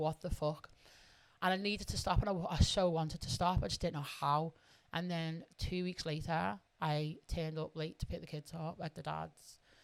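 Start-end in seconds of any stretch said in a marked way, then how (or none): 0.0-0.7 put-on crying while speaking. Retelling talking to herself in the mirror: imitating own crying. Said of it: "crying, like".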